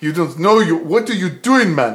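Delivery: loud, thick, fake Russian accent.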